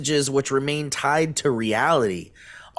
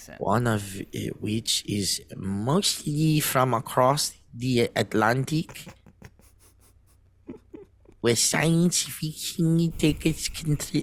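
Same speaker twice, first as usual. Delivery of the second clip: put-on German accent on the English; 4 dB quieter than usual. Asked to say the sentence in a German accent; German accent. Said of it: "Do it in a German accent".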